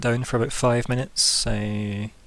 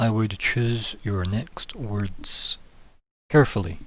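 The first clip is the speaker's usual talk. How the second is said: very calm, perfectly composed, controlled tone. A narrator voices a man sitting across a restaurant table, very calm. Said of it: "he says very calmly".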